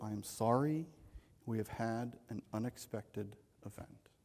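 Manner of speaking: most solemn, grave voice. Retelling what the facility manager said to the team: imitating a solemn tone. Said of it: "in his most solemn tone".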